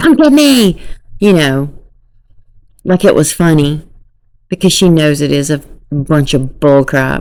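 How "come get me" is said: play-acted very high, gleeful, excited call. Repeating her words to show how she sounded, imitating someone happy and excited. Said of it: "she sounded like happy and excited right there".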